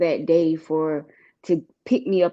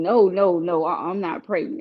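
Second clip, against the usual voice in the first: acted pleading voice. Retelling denying a pregnancy to family: retelling own pleading denial. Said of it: "I'm pleading".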